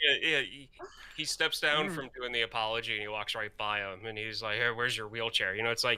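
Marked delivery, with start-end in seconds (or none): 4.6-5.5 imitated whisper, faster. Retelling what a man whispered to another after his apology, retelling a whisper. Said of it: "he whispers it so only he can hear".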